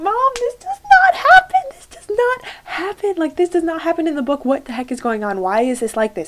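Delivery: very high, swooping, tearful bawling scream. Retelling watching a movie with mom: imitating crying and screaming. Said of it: "bawling my eyes out, screaming at my mom".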